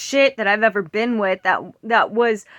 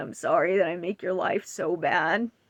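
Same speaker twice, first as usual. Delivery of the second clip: mock tearful child crying, much quieter and lower; 5 semitones lower, 8 dB quieter than usual. Retelling what a crying six-year-old said, imitating a crying child. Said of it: "and she was crying".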